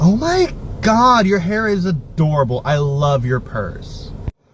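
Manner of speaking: very slow, exaggerated effeminate voice, high and drawn out. Showing how compliments on an accessory get said: extra effeminate voice. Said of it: "I make my voice extra effeminate".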